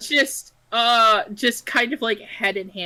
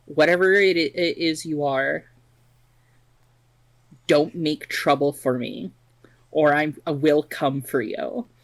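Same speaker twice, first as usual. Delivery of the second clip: whispered, menacing tone, lower pitch; 6 semitones lower than usual. Playing it cool while warning an unseen entity: whispering a threat. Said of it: "just going to whisper".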